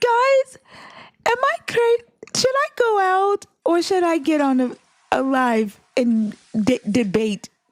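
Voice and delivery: high, very slow, drawn-out voice. Imitating Venus asking the group whether to go live and debate: Venus impression. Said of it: "Is that your Venus impersonation?".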